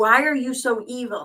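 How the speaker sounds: mock angry, slow, pissed-off accusing tone. Recounting a scene where a man comes out to confront a woman: mock-angry retelling. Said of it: "Bam's pissed".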